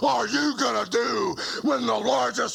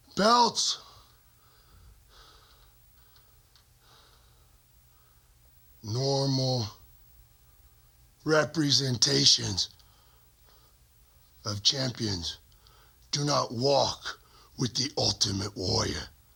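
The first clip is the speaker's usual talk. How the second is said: heavy breathing, lower in pitch; 9 semitones lower than usual. Speaking directly to Hulk Hogan, breathing heavily. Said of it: "(breathes heavily)".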